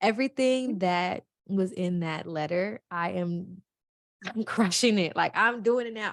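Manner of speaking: slow delivery, fighting back tears. Speaker recalls a letter from a teacher that made them cry, holding back tears. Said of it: "I'm trying not to cry".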